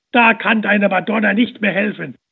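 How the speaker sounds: very loud, jeering, scornful yell. Someone in the crowd mocks a woman praying at the cistern, shouting scornfully. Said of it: "schrie einer voller Hohn".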